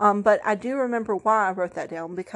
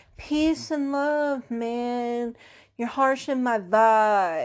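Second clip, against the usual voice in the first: put-on mellow, drawn-out male hippie drawl; 3 semitones higher than usual. Talking to Aaron, who is whining on the couch, put-on hippie voice. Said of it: "I get like my hippie voice on".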